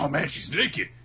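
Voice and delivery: loud, flustered, blurted outburst. Retelling a scene, acting out Natsu's reaction: mock-flustered Natsu. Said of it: "gets all flustered about it".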